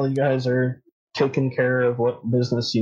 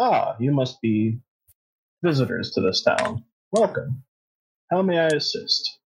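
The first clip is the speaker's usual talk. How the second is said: put-on kindly, gentle old man voice; 2 semitones higher than usual. Voicing a kindly old priest who welcomes visitors: kindly old priest voice. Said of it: "a kindly old human man".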